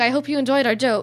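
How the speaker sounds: plain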